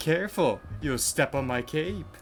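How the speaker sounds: exaggerated, obnoxious, over-the-top vampire voice. Trying the most over-the-top voice possible: obnoxious vampire voice. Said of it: "I'm gonna try doing the most obnoxious vampire voice possible".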